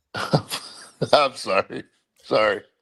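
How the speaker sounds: speaking with words broken up by giggles. Apologizing to the hosts after a joke, laughing while talking. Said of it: "I'm just laughing at the whole E Z thing".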